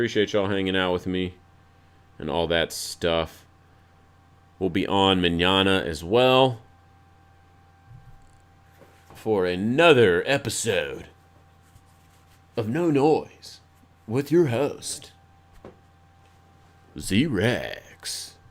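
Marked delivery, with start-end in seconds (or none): 4.6-18.3 commercial announcer voice, very slow, drawn out, swooping. A show host signs off the episode in a funny advertising commercial voice. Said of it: "advertising commercial voice".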